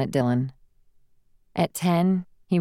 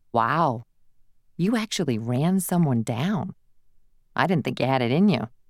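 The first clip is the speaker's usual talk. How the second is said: usual speaking voice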